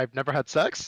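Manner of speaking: upspeak, pitch rising at the end on sex. Telling about an STD screening, rising question tone on sex. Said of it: "I say it with the question mark at the end".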